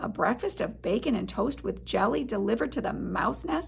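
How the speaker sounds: ordinary delivery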